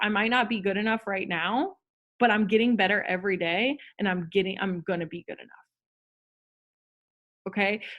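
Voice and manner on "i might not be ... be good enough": ordinary talk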